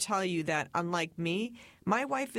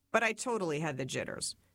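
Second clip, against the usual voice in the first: normal talking voice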